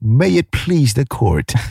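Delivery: put-on British accent. Demonstrating how to address the bench in court, in a UK accent. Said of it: "You have to use a UK accent".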